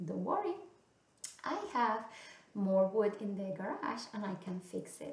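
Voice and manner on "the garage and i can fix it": plain reading voice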